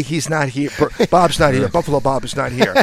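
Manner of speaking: ordinary delivery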